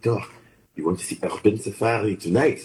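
put-on cute French accent. Recalling a visit in Ethiopia, the speaker quotes Raphael's cute French accent. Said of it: "in his very cute French accent to say".

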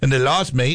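put-on, thrown-on Australian accent. Discussing the Rams' game in Australia, in a put-on Australian accent. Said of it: "throw out my Australian accent".

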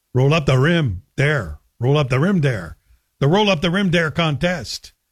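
Québécois-accented English, Quebec French accent. Asking how they'd say it in Quebec, then showing it: Quebec accent. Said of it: "with a Quebec accent".

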